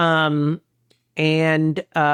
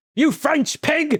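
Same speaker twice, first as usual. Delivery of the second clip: very high, shrill, screeching yell; 11 semitones higher than usual. Joining in on the US version of the show: yelling Gordon Ramsay impression. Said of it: "To the U S version where he's like".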